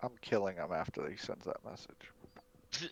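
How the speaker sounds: very slow, very quiet, hushed whisper. Voicing Drakara, who whispers a threat about the prisoner: whispering. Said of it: "Drakara whispers".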